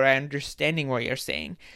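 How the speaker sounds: ordinary talk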